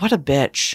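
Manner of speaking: low, muttered under the breath. Retelling what a passing woman said at the grocery store: imitating a muttered insult. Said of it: "under her breath".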